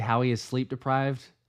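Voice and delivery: ordinary talk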